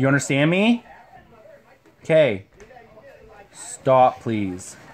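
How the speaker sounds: slow, grumpy grown-up voice. Telling the kids to stop, in a grumpy adult voice. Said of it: "They don't like when I use my adult voice".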